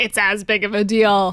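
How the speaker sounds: put-on angry voice. Imitating angry fan mail about cookies: imitating angry fan mail. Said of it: "angry fan mail being like".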